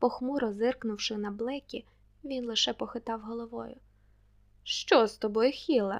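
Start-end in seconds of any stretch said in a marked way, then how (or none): 4.6-6.0 teasing, provoking, smiling tone, louder and slower. A man turns to the silent young man beside him, asking with a provoking smile. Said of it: "запитав той достойний чоловік, зачіпливо усміхаючись".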